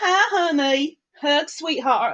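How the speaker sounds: fake American accent, badly done. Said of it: "I can't do your accent".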